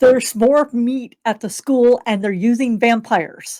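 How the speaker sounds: ordinary talk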